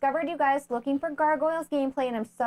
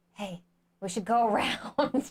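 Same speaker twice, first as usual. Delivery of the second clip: acted whispering; 2 semitones lower than usual. Defending a game plan to the other speaker, acting out whispering. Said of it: "I'm whispering my plan".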